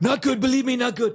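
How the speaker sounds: squeaked out in a very high-pitched voice. After calling the first try terrible, doing an impression of the man discussed. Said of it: "I can do a way better one".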